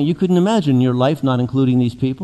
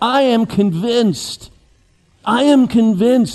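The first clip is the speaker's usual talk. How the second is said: slow, raised, convinced exclaiming outcry; 7 semitones higher than usual. Retelling how Paul shouts out at verse thirty-nine: imitating Paul shouting. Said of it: "he shouts out".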